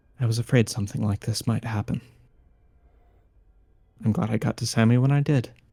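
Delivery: mild, soft, gentle voice. Narrating a scene, voicing someone heard from behind the party, in a gentle voice. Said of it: "you hear a gentle voice".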